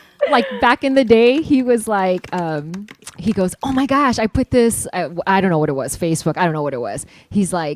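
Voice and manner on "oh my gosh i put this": ordinary delivery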